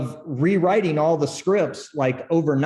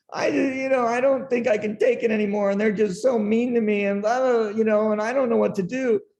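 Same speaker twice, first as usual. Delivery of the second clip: mock tearful, weepy, high crying voice; 6 semitones higher than usual. Standing before a man at his desk, acting out the past self: retelling own crying. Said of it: "I'm crying going".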